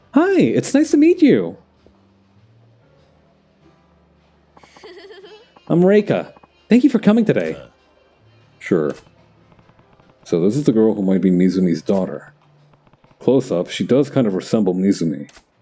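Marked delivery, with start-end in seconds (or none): 0.2-7.6 bright, very upbeat voice, high and swooping. Voicing a hostess greeting a customer for the first time, in a very upbeat Ai voice. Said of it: "I'm gonna give her like a very upbeat voice".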